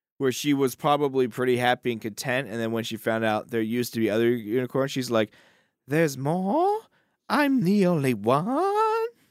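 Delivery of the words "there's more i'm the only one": high, swooping, very slow, stretched-out voice. Imitating the unicorn finding out there used to be others: Mia Farrow impression. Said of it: "That's my best impression".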